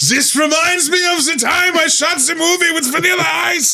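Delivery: fake European accent, pitched very high. Told the man being voiced has a European accent, the speaker tries again in a European accent. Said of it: "he has a European accent. Try it again".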